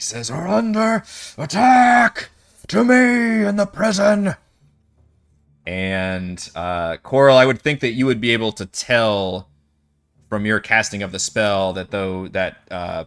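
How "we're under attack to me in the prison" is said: booming shout, much higher, louder, slower. Narrating a game, voicing the commander shouting through a closed door, big booming shout. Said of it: "He's got that big booming presence voice".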